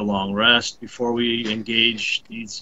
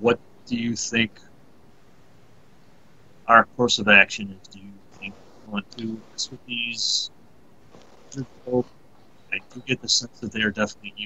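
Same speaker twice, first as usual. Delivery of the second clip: soft, quiet whispered aside. Going over to Leovan and asking him a question: whispered. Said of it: "I whisper to him".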